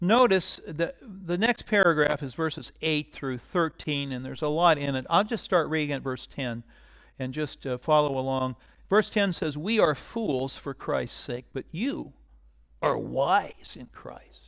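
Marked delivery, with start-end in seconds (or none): 9.6-14.5 mocking, sarcastic delivery. Reading a scripture passage aloud to listeners: sarcastic reading. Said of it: "I'm trying to be sarcastic as I read it".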